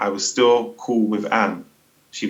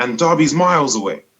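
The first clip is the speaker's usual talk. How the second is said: acted, heated, high angry shouting; 5 semitones higher, 4 dB louder than usual. Retelling an argument with the caller: imitating someone shouting. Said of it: "he was shouting down the phone at me".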